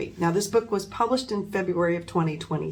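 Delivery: ordinary delivery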